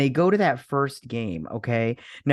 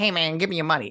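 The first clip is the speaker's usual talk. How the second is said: high helium voice, much faster; 3 semitones higher than usual. Retelling what a man said at the store, high helium voice. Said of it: "make his voice like all helium".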